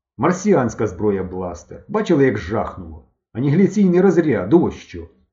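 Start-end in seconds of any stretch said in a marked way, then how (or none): none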